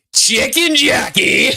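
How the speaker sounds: very high, intense, full-energy burst. Showing the other person how to say it: highest energy voice. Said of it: "In your highest energy voice you can".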